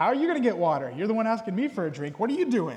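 loud, mocking, scornful, sarcastic jeer. Retelling the woman's words at the well to Jesus: imitating a sarcastic tone. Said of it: "hear the sarcasm even being used in her voice".

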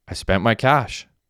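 ordinary talk

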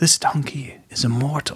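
hushed whisper. A character whispers into someone's ear so everyone else won't hear. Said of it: "so I'm going to whisper this in your ear".

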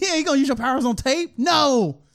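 mocking, high-pitched put-on voice.

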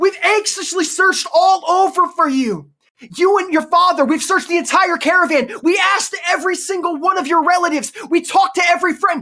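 put-on frightened pleading. Retelling a mother scolding her son after searching for him, imitating an anxious, frightened mother. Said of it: "Meeting his mother's anxiety, her fright, her fears".

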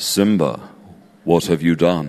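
low cartoon villain voice, English accent. A speaker quotes a Disney baddie's line, in a Lion King villain voice. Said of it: "every time they want a voice for a baddie".

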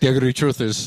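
put-on heavy Scottish accent. Quoting what a man started saying, thick Scottish accent. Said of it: "in his thick Scottish accent".

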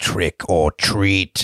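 spooky, low, deep demonic growling voice. Recounting a movie scene, the narrator voices the figure outside: deep demonic voice. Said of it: "A demon voice".

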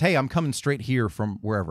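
ordinary talk

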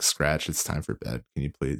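hushed, soft whisper. Describing a podcast host's dad popping in on the show, imitating Sonny Scratch whispering. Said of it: "you can hear him whispering like".

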